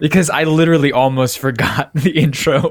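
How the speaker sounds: talking through giggles. Explaining to a co-host why you laughed mid-intro: laughing while talking. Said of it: "Why are you laughing".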